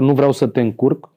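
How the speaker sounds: normal talking voice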